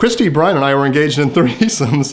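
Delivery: giggling and laughing mid-sentence. Reading someone's written statement aloud, laughing while talking. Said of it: "sorry I'm laughing".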